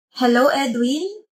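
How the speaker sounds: put-on cutesy, sweet, affected voice. A caller greets edwin on his phone, cutesy affected voice. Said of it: "Ang pabebe pa na boses mo. Halatang arte-arte".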